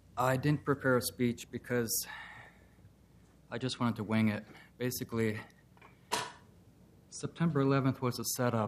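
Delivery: out of breath, winded. Speaker at the public comment podium, just arrived on a bike, out of breath. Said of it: "sorry, I'm out of breath".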